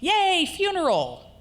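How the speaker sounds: bright, happy, cheerful voice, pitched very high. Saying a sad word in a really happy tone, cheerful happy tone. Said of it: "in a really happy tone of voice".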